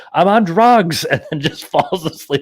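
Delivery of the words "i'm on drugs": sudden, blurted, high, loud yell. Speaker retells mom yelling from the bedroom, imitating mom yelling. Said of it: "She yells".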